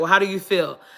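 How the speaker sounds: normal talking voice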